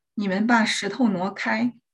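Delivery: ordinary delivery, nothing marked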